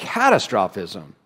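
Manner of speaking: catastrophism with stress on the wrong syllable.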